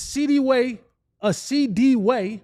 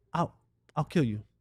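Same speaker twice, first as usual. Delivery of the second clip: calm menacing tone, very low and soft; 8 semitones lower, 7 dB quieter than usual. Describing how a really calm person threatens someone: imitating a calm, quiet threat. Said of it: "the person who is really calm that'll say".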